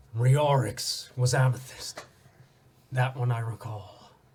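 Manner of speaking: grave, solemn put-on voice. Ixilian speaks to the listener from the reflection, in a somber tone. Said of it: "almost like a somber tone in his voice".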